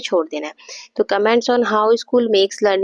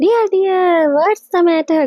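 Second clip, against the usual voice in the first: cheerful, bright, higher pitched delivery; 9 semitones higher, 3 dB louder than usual. Teaching how to say a sentence in different moods, demonstrating a happy tone. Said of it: "जब आप खुश हैं तो तो आपको ऐसे बोला है".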